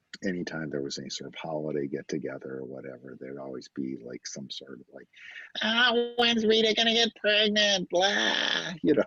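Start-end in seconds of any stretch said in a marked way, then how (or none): 5.6-8.7 annoying voice, pitched way up, very high. Describing holiday get-togethers, doing an annoying relative voice. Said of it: "that's my annoying relative voice".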